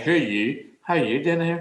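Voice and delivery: put-on local Northern Irish accent, like local kids. Retelling what the local kids asked: Northern Irish accent. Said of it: "they were talking like this".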